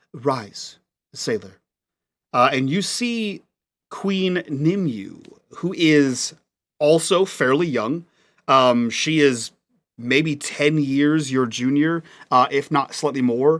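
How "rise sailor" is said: much softer, hushed, soft-spoken royal voice. Voicing a young queen greeting a kneeling sailor: much softer voice. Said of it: "a much softer voice than you would have".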